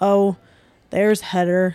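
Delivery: put-on loud, raspy, deep, low kid's rumble. Retelling what her kid said seeing her on TV, in Roman's raspy, deep voice. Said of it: "In his like raspy, deep voice".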